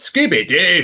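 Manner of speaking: attempted Scottish accent. Showing how to say 'Scooby Doo' in a Scottish accent. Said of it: "You've got to try and be Scottish".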